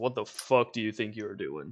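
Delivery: put-on voice dropped very deep. Retelling what a man said to him, very deep voice. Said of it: "In like a very deep voice".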